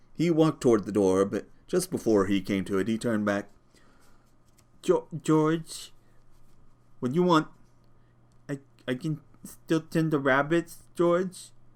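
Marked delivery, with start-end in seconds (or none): 4.8-11.5 faltering, miserable, high, halting stammer. A ranch hand turns back at the door to ask george something, halting, stammering. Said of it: "he said miserably".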